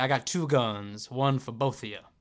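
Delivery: put-on Southern accent. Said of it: "Frank Underwood Southern accent".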